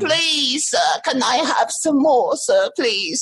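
put-on high, slow, begging boy voice.

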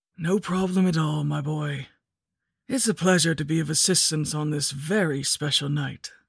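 rasping, husky-throated, raspy, hoarse voice. Reading a scary story aloud, a stranger helping with candy: raspy voice. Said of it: "he said in a raspy voice".

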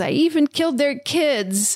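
high, put-on whimpering. Retelling a story, acting out a fleeing woman's words: imitating a whimper. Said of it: "she like whimpers and says".

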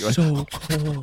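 mock-shivering voice. Describing someone always going around the Earwolf studios, imitating someone shivering. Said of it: "like he's like shivering".

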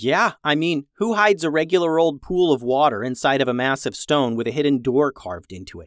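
ordinary delivery

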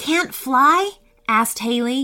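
ordinary delivery

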